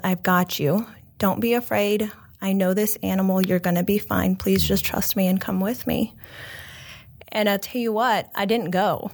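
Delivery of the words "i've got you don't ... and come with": acted earnest, compassionate voice. Retelling what a man said to the hesitant speaker, retelling an earnest compassionate voice. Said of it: "in the most earnest and compassionate voice".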